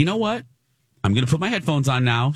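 mock-polite, high and fast. Retelling how Lisa finally told a talkative man on the flight, imitating Lisa's very polite tone. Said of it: "in a very polite tone".

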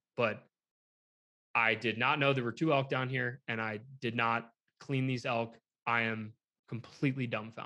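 ordinary delivery

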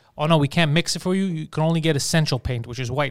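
normal talking voice

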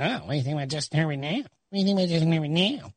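gloating, taunting, oddly put-on voice. Retelling texts from a colleague who backed the quarterback: Pete Prisco impression. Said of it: "why are you talking like that".

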